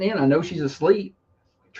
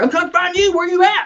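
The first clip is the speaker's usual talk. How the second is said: put-on, shrill, very high, cranky voice; 13 semitones higher, 4 dB louder than usual. Retelling what she said on waking: imitating someone cranky. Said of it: "she's cranky at me".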